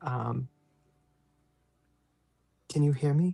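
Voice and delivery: under the breath, slow. A player at a clock speaks to a spirit, hoping nobody else hears, whispering. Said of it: "And whisper to the spirit".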